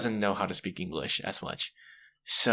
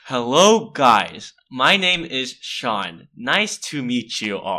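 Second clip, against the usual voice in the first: very slow, exaggeratedly careful, over-simple speech; 3 semitones higher, 7 dB louder than usual. Retelling a first class session with students: imitating own talk to foreigners. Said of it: "talking to them like".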